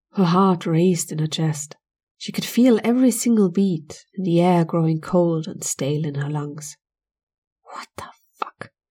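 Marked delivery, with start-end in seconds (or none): 7.7-8.8 barely audible, very quiet, breathy whisper. Amanda hears a low scraping under her bed: whispered. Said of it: "Amanda whispered".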